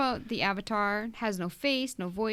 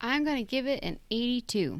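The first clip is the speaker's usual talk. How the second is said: mechanical, robot-like delivery; 2 semitones higher than usual. Giving a game score when asked to go: robotic delivery. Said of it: "It's very robotic".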